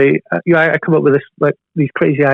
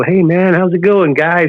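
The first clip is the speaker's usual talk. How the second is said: slow, cool, fake American accent; 3 semitones higher than usual. A speaker imitates UK bands who put on accents, in a fake American accent. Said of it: "talk with an American accent".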